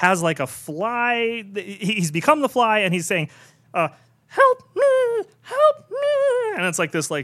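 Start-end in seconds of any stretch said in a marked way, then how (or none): 4.3-6.6 very high, very slow, tiny drawn-out squeal. Retelling a film scene, imitating the Fly: high-pitched squealy voice. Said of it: "high-pitched, squealy little "help me."".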